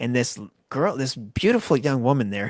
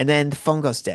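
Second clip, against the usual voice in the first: ordinary talk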